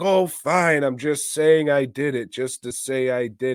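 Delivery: mock unconvincing, noncommittal, half-hearted, wishy-washy. Retelling a movie actor's poor line delivery: imitating a wishy-washy, half-hearted confession. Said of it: "he kinda says it like".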